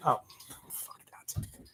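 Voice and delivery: very quiet, hushed whisper under the breath. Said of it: "that was me whispering".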